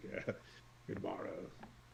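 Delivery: very quiet, whispered, breathy character voice. Narrating a character who greets an approaching druid, in a put-on character voice. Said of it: "I'll use a voice finally for this one".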